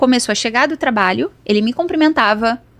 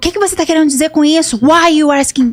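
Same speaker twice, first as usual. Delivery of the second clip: put-on nervous, agitated, aggressive, higher and louder; 4 semitones higher, 4 dB louder than usual. Recounting a tense encounter, the speaker imitates a man's nervous aggressive reply. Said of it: "muito nervoso".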